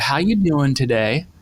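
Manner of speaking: put-on Southern accent. Retelling how the speaker's wife greeted the cashier at checkout: southern drawl. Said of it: "my wife in her southern drawl said".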